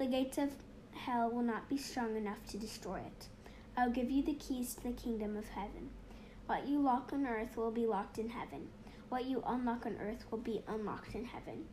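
normal talking voice

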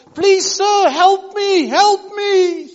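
drawn-out, very high, very loud desperate scream. Retelling how a mother cried out for help: retelling a mother screaming for help. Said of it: "the mother was screaming, crying out".

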